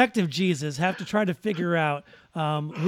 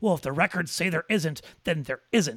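play-acted prissy, huffy, snooty, cross voice. Discussing an Obi-Wan scene, the speaker quotes the Jedi Temple librarian; mock-snooty librarian. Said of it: "she gets all snooty and angry and pissy".

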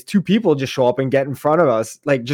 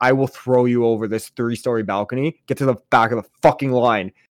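plain

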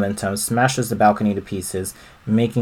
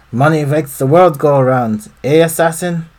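put-on German accent with raised, pitched-up voice; 6 semitones higher, 6 dB louder than usual. Voicing the foreman in a game cutscene: German accent. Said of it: "again, German accent".

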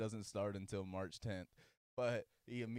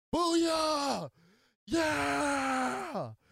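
very high, loud, shrill scream, yeah drawn out; 13 dB louder than usual. Retelling a man shouting across a restaurant, screaming out. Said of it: "we hear this man scream out".

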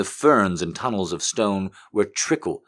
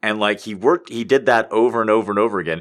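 usual speaking voice

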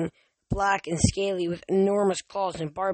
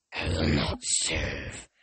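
deep, hurt, wounded, breathy, near-whispered voice; 4 dB quieter than usual. Tyson, mimicking voices as if in a trance, speaks in a deep, wounded voice. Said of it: "Tyson said in a deep, wounded voice".

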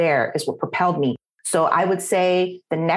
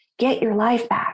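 mock urgent outcry, yelled but kept mild; 6 semitones higher than usual. Retelling how a sister confronted the speaker: imitating sister yelling. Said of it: "she just started yelling".

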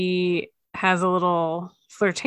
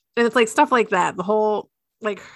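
ordinary talk

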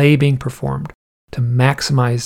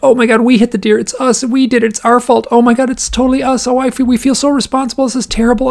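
high, tearful sobbing, completely emotional; 11 semitones higher, 5 dB louder than usual. Retelling what a husband and wife said after hitting the deer, imitating someone crying. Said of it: "And they're crying".

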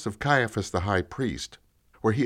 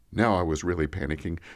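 plain

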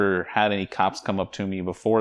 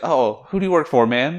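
play-acted easygoing, chummy, suddenly casual and offhand; 8 semitones higher, 5 dB louder than usual. Retelling an officer's question after seeing the badge: imitating a casual tone. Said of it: "got real casual, real fast".

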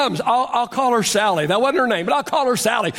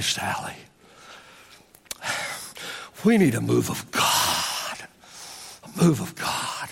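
mock earnest, slow, breathy near-whisper; 13 semitones lower, 7 dB quieter than usual. Retelling words spoken to Sally in an office: retelling own serious tone. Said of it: "I get real serious".

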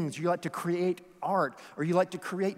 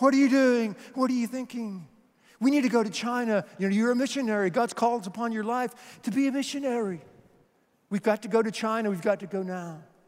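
bad, rough attempt at a Scottish accent; 4 semitones higher than usual. Retelling how a sister cornered her brother Eric, speak as Jenny in a poor Scottish accent. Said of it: "I know it's a poor Scottish accent".

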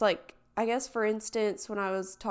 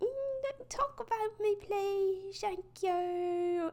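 put-on British accent, very high and slow; 13 semitones higher, 4 dB quieter than usual. Imagining someone asking not to be talked about, put-on British accent. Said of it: "I don't know why I did that accent".

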